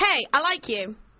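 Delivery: ordinary talk, nothing marked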